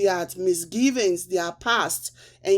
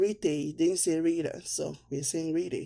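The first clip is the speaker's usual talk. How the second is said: normal talking voice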